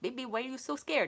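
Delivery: put-on heavy Filipino accent, laid on thick. Retelling what he said to her that night, in his thick filipino accent. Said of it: "in his thick Filipino accent".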